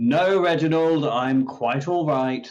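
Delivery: loud, far-carrying shout. Voicing a character answering a creak from the drawing room, shouting from another room. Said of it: "shout from the drawing room".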